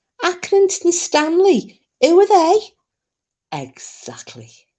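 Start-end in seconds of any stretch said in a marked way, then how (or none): 0.2-2.6 put-on Liverpool Scouse accent, pitched very high. Recalling a line others once said in an accent: Scouse accent. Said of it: "wasn't it a Scouse accent they did?".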